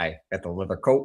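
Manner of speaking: put-on Chicago accent. Quoting him to show Chicago pronunciation: imitating a Chicago accent. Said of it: "the way they pronounce certain words in Chicago".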